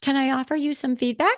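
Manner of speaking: put-on sugary-sweet voice. Retelling a movie psychologist's repeated line, imitating a really sweet tone. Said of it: "she would say it in this really sweet way".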